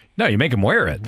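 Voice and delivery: ordinary talk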